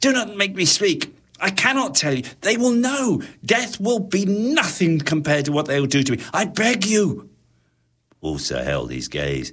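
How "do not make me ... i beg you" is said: desperate, very high, pleading, begging cry. A panicked man begs not to be made to speak, crying out. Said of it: "he cried".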